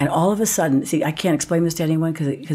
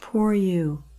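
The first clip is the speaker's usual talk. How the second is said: mock self-pitying, sorry-for-yourself voice; 3 semitones higher than usual. Retelling what an inner voice said to them: imitating a self-pitying voice. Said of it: "This self-pity".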